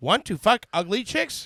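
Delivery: computer-generated, AI-style ad narrator voice. Retelling a video ad that has an AI voice: imitating an AI voice. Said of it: "the A I voice who goes".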